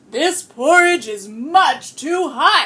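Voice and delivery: great big, loud storybook papa bear voice. Reading a story aloud to listeners, great Papa Bear voice. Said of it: "said Papa Bear in his great Papa Bear voice".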